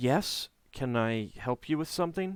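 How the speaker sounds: wary, guarded tone. A woman with a child behind her skirts answers the visitors: guarded. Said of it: "and she says, guardedly".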